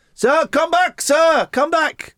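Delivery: put-on foreign-accented English. Retelling a haggle over pesos, voicing the seller calling him back: non-native English accent. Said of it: "I did someone whose first language wasn't English".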